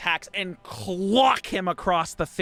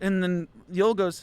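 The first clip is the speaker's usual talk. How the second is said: usual speaking voice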